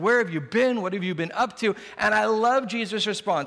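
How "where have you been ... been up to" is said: worried, frantic, freaked-out, panicked voice. Retelling a Bible story, the speaker quotes a very concerned mother: imitating a freaked-out mother. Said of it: "She's freaking out".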